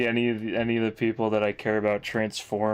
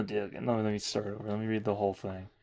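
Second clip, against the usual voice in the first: ordinary delivery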